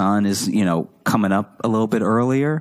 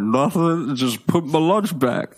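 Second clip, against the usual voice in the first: mock mouth-full talk, much higher pitch; 7 semitones higher than usual. Retelling a classmate caught with her lunch answering them, imitating talking with mouth full. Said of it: "had a mouthful of food".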